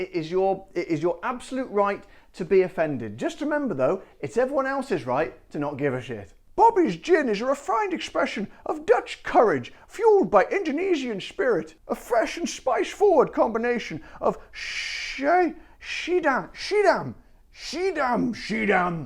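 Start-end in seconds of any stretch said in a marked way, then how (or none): 6.6-19.1 clumsy, very bad Dutch accent, pitched up. Reading the description of a gin aloud, in a very bad Dutch accent. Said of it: "I shall do it in my very bad uh, uh, Dutch accent".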